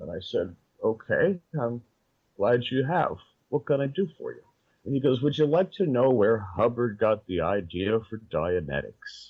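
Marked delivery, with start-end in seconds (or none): 5.2-9.3 put-on polished, articulate, well-spoken old man's voice. Speaker retelling what a very old man asked him, speaking articulately. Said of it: "a man with an elegant voice".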